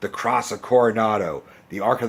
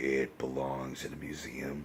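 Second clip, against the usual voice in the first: very low, quiet mumble under the breath; 9 semitones lower, 15 dB quieter than usual. Showing the voice the actor is famous for, in a very low, mumbly Harrison Ford voice. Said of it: "like mumbly voice that Harrison Ford is famous for".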